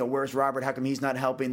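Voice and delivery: ordinary talk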